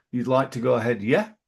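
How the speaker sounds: rising hook on the final yeah. Showing listeners how to issue a statement while hinting an opinion, rising hook at the end. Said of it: "that little hook on the end".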